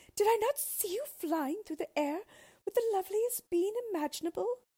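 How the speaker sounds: shrill, ringing, very high, loud cry. A woman answers someone begging her not to be angry, crying out. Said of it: "cried Bellissima".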